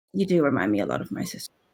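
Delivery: soft, low mutter under the breath. Voicing a character leaning over to another mid-story, softly mumbling. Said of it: "just mumble".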